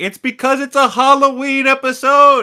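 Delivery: shrill, very high-pitched, loud yelling. Recapping a TV episode, retelling yelling at the TV screen. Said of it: "I'm over here yelling at my T V screen".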